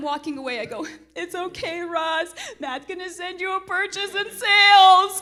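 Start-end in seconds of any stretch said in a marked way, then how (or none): 1.1-5.2 crying, tearful, high, raised voice. Retelling walking away from a house showing while crying: retelling own crying. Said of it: "As I'm crying".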